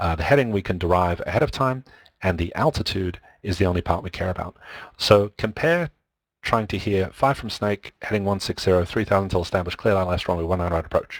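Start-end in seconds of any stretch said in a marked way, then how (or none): 7.1-11.2 rapid, mumbled, run-together radio-style speech. Example radio clearance a learner must catch: mumbled and very fast. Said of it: "I deliberately mumbled that and said it really quickly".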